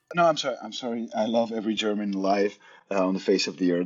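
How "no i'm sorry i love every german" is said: ordinary delivery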